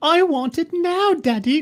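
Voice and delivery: put-on very high, slow, old English accent. Mocking a clip of someone who begged for the camera: Veruca Salt voice. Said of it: "She's Veruca Salt".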